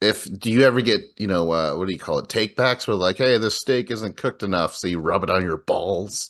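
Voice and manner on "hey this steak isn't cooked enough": normal talking voice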